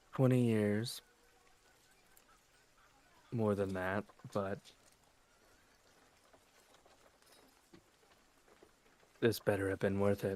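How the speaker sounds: low, soft, nearly a whisper. A character alone in the hallway, pulling out a holy symbol, speaking low, almost whispering. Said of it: "in a low, uh, softer voice, almost a whisper".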